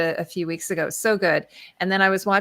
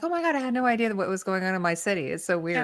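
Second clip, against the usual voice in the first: ordinary delivery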